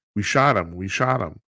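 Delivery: ordinary delivery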